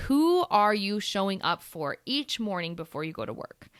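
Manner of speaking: usual speaking voice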